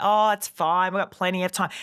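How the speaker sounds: ordinary talk, nothing marked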